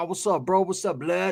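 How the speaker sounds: hushed, slang-heavy street way of talking. Describing a man's quirks, the speaker imitates how he talks. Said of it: "That's how he talks".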